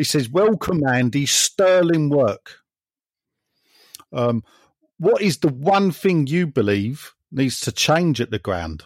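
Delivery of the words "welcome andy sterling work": put-on rural West Country accent. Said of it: "'cause this is how he talks".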